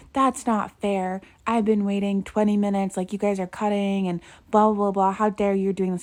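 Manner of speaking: mock-furious, angry, indignant yelling. Retelling a shopper's outburst at teenagers in line: imitating a man yelling. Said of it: "starts yelling at the teenagers".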